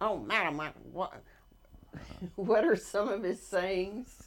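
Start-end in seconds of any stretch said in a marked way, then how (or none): 0.0-1.1 put-on strong Texas accent, louder. Describing a golfer nobody could understand, the speaker quotes him in a big Texas accent. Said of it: "he had the biggest Texas accent".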